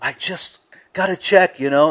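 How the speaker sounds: high, thrilled voice bursting with excitement. Recounting a woman calling about a check she received: imitating her excitement. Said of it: "and she's really excited".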